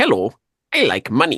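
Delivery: loud, slow, drawn-out, swooping sing-song delivery. Quoting Mister Krabs about sellers charging outrageous prices: Mister Krabs voice. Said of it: "To, to quote Mister Krabs".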